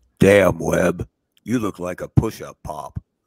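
voice dropped way down, very deep and low. Retelling what a buddy said about a sunburn: Tim Gates deep voice. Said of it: "he had a real deep voice".

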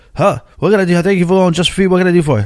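imitated out-of-breath voice. Retelling a phone call where a store worker answered: imitating someone out of breath. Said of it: "he sounds out of breath".

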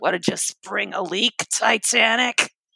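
slow, drawn-out, smoky voice.

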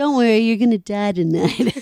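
dead-serious, grave, very serious threatening voice. Repeating the little brother's dinner threat: imitating Carl's very serious voice. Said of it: "He's got a very serious voice".

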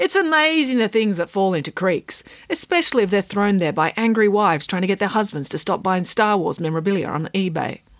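plain

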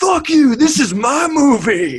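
very high, shrill, drawn-out yell. Speaker retells snapping back at the director after messing up a shot: retelling yelling at the director. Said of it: "I'm yelling at the director".

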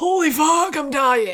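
high, slow, drawn-out exhausted outcry. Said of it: "you're like".

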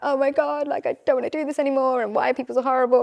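play-acted weepy sobbing, high-pitched crying. Recalling what you said to him before therapy, imitating your past crying. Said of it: "I'd like be crying like".

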